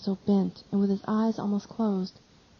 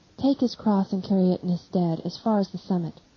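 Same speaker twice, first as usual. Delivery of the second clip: usual speaking voice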